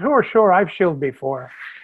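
Irish brogue, rolled-out delivery. Retelling an actor's reply to people explaining toy-pushing, Barry Fitzgerald's Irish brogue. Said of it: "in his Irish brogue".

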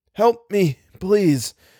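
faint, weak, high pleading cry. Algernon calls to Little for help, with a weak exclamation. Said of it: "exclaimed Algernon weakly".

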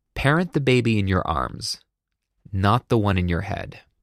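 plain

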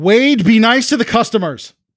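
high woman's voice calling from offstage. Game narrator voices a woman calling from the back to the man pouring drinks. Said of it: "you hear a woman's voice saying".

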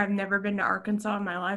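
normal talking voice

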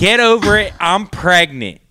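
high-pitched yelling. Speaker retells what a pregnant woman shouted after a joke, retelling a yell.

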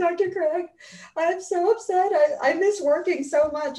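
very high, slow, tearful crying voice. Retelling calling dr. craig from the parking lot, imitating crying on the phone. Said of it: "I'm like crying".

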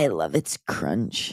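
breathy, sultry, whispered influencer-style voice. Asked in a game to compliment the food, answer in a sexy IG thoughty voice. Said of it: "in your sexy IG thoughty voice".

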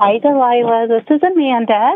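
cheery, chipper, upbeat voice. Caller greeting the radio host on air, sounding chipper. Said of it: "You sound chipper tonight".

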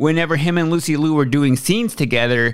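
ordinary talk

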